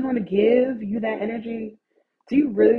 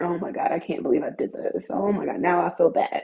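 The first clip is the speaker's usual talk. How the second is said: put-on remorseful tone, faster; 4 semitones lower than usual. Speaker acts out her own reaction after hypothetically beating someone up, mock-remorseful. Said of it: "I'm so emotional and loving".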